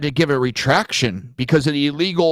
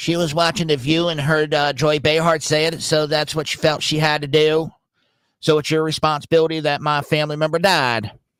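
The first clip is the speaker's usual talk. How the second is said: put-on American Southern accent. Speaker acts out an imagined person answering a question, in a Southern accent. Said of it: "I did it with a Southern voice".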